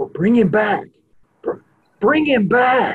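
high, understated, low-key delivery. Storyteller recounting a crowd event, retelling someone starting quietly: a quiet murmur. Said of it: "starts going real quietly".

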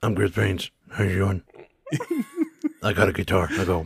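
barely intelligible mumbled zombie voice, swooping, wandering pitch. Introducing the character Chris Brains, the speaker uses a barely intelligible voice. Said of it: "your voice got even less intelligible somehow".

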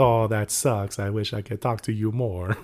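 mock Italian-sounding accent. Retelling what a woman said to them, in an Italian-sounding accent. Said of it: "That sounds like an Italian".

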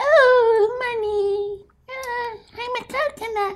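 squeaky, very high, very slow silly voice. Speaker imagines how coconuts at fairs would talk: high voice. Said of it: "with the high voice".

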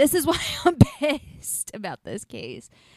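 laughing out of sheer frustration while talking. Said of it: "It's just me being frustrated".

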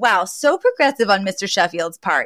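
usual speaking voice

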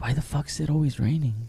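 very soft, quiet half-whispered aside. Retelling leaning over to a sister during the movie: retelling a half-whisper. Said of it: "I lean over and I just whisper".

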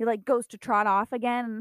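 plain

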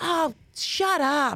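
put-on strong Rhode Island accent, laid on thick. Speaker retells what a lady in Rhode Island said: thick Rhode Island accent. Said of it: "She had a thick accent".

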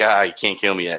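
put-on smug, smirking tone. Retelling a character's line in a scene: imitating a smirking line. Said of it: "you're smirking, you're like".

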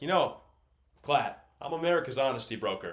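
grand, slightly loud delivery. Retelling what a sports pundit always says to his co-host: pompous Colin Cowherd impression. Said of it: "very pompous".

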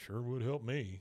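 muttering under breath. Retelling a man's reply while his companion boos, muttered under his breath. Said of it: "Like kind of under his breath".

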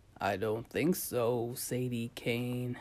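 dry, deep, heavy, looming voice. Amid evil laughter, a voice echoes around the room, answering in a dry, heavy, deep voice. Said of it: "A dry, heavy voice, deep as a nuclear blast".

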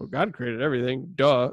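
put-on matter-of-fact child "duh" tone. Imitating how the kid answers who created everything: imitating a kid's matter-of-fact "duh" tone. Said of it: "that's kinda how he says it".

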